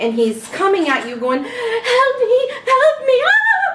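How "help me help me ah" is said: frantic little gnome screaming, very high and slow. Narrator voices a little gnome coming at the listener: screaming little gnome. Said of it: "he's screaming".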